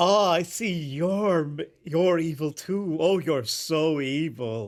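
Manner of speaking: very slow, drawn-out, sultry and suggestive drawl. Imitating the nemesis Ender praising someone for being evil: sexually charged Ender voice. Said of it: "so goddamn sexually charged".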